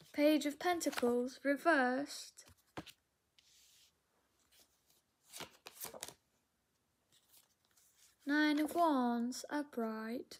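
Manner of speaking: put-on, not convincing British accent. Speaker names tarot cards during a reading, British accent. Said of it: "I could do a better British accent than that".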